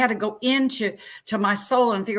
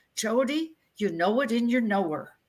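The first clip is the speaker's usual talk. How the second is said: put-on Norwegian accent, put on; 4 dB quieter than usual. Quoting what their mother told them, the speaker imitates her Norwegian accent. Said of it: "my mother said in her Norwegian accent".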